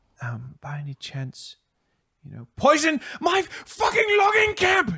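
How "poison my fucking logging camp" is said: furious, very high, rising enraged scream. She looks up at him and accuses him over her logging camp, screaming. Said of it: "She screams, screams at him".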